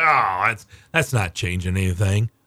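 low, scoffing, dismissive tone.

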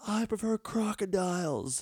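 shouting. Recalling yelling at the Florida game, retelling a yell. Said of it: "I was yelling stuff like".

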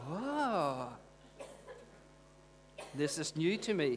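wonderstruck, very slow, long drawn-out oh. Showing the congregation how to react when preaching interests them: awed reaction. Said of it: "filled with awe".

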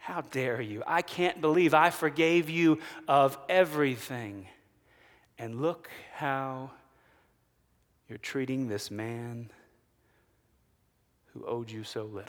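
acted-out angry king voice. Retelling a parable, the king rebuking the unforgiving servant: acted angry king. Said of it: "the king then is angry".

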